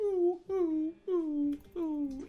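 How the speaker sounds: high, whiny, whimpering dog voice.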